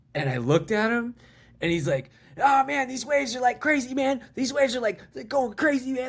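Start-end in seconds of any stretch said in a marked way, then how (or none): 2.4-6.1 very high, play-acted tweaked-out, strung-out voice. Retelling meeting a local guy while surfing, imitating a man high on meth. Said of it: "he was clearly on so much meth".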